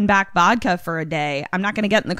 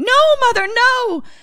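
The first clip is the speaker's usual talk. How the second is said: shrill, high-pitched, loud screaming; 6 dB louder than usual. Recapping a show's plot, acting out a character's outburst: retelling a scream. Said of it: "she starts screaming".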